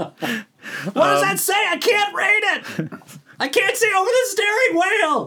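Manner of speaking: put-on old grandma voice, very high pitch. Joking that it is Florida, doing an old grandma impression. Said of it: "It's an old grandma impression that I have".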